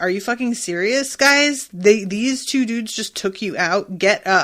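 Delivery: plain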